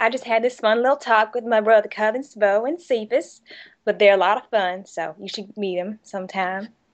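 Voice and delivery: believable, convincing put-on Southern US accent. Performing a line for an interviewer: convincing Southern accent. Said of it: "a very convincing and compelling Southern accent".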